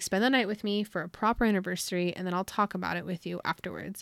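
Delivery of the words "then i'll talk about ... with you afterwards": ordinary talk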